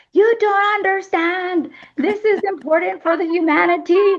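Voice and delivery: mock, very high, insistent yelling. Retelling speaking through herself as Nostradamus in an office: imitating own yelling as Nostradamus. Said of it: "I'm, like, yelling in her office".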